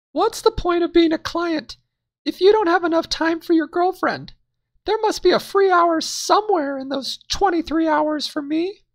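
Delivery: very high, loud, choked-up, tearful, fiery reproach. Story narrator mimicking his redheaded girlfriend's voice as she reproaches him, mimicking a fiery girlfriend. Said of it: "The redhead was full of fire. / He then mimicked her voice. / And from the tears, she choked up her last words to me".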